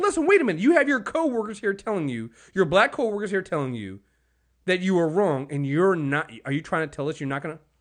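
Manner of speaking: mock, genuinely angry, mad, pressing delivery. Imitating Don Lemon confronting Jeffrey Lord: imitating Don Lemon being mad. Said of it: "he was actually mad at Jeffrey Lord".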